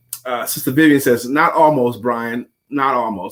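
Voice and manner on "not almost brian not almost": ordinary talk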